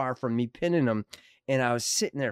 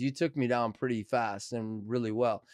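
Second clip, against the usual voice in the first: ordinary delivery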